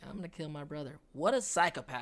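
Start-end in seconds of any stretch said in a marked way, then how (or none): 0.1-1.0 mock smug delivery, quieter. Retelling how a character looks at her task: imitating a smirking character. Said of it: "you see her smirking like".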